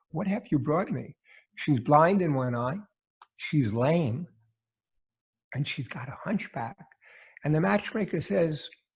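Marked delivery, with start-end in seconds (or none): 0.1-6.7 hushed, whispering voice. Telling a joke, voicing the bridegroom complaining to the matchmaker: whispering. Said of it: "he whispers and says".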